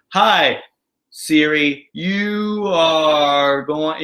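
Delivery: very slow, deliberately stretched, dragged-out speech. Imitating how people talk to Siri, with very slow speech. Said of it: "you actually can talk too slow".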